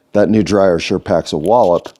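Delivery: ordinary delivery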